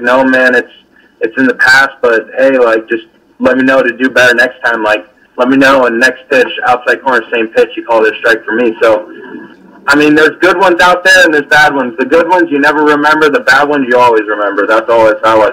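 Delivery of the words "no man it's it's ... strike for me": ordinary talk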